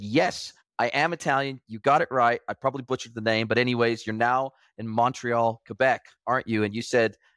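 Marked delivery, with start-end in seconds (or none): none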